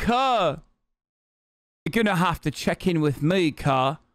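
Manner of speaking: video narrator's voice and manner. Reacting to a video, mimicking the narrator's line: imitating the video narrator. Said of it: "my man said".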